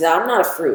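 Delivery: ordinary talk, nothing marked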